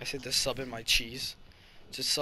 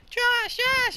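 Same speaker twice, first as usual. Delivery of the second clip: put-on much higher, louder girl voice crying out. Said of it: "Make the girl say that".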